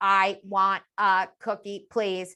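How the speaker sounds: flat, mechanical, machine-like robotic monotone. Imitating a sixth grader's robotic speech: flat robotic voice. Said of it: "This robotic speech".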